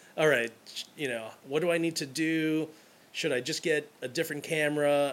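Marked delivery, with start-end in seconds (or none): none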